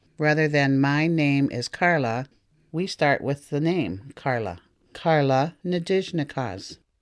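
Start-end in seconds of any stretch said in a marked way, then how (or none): none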